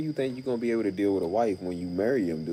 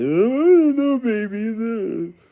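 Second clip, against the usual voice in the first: very high, very loud, slow blubbering; 11 semitones higher, 9 dB louder than usual. Retelling how a cheating ex-boyfriend cried: imitating someone crying. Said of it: "Now he got the nerve to cry. Crying".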